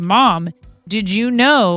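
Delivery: imitated loud announcer-style delivery. Retelling what the kid announced during the live stream: imitating a loud announcement. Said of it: "he announces very loudly".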